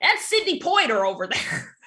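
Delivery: broad, sing-song Midwestern American accent. Joking about mispronouncing people's last names, saying one in Midwestern American accent. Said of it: "the Midwestern in me wants to go".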